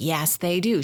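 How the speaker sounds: acted firm, certain, adamant schoolgirl insistence. Retelling a classmate arguing with Riley, mock-adamant insistence. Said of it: "She's adamant".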